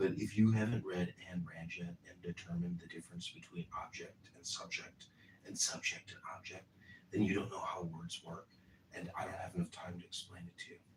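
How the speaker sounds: whispered speech. Editing a video while a girlfriend sleeps in the other room, whispering. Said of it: "so I'll have to whisper".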